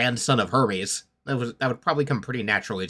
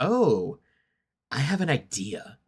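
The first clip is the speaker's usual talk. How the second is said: very slow, sly, crafty scheming tone; 3 semitones higher than usual. Describing a character's change of expression while reacting, imitating a crafty scheming tone. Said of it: "shifts into being all crafty and like".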